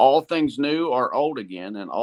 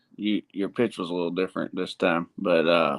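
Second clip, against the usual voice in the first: ordinary talk, nothing marked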